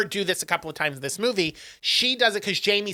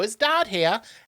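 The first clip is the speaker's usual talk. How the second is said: put-on English accent; 3 semitones higher than usual. Retelling a story, quoting him as he comes in, English accent. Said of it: "I'm doing an English accent".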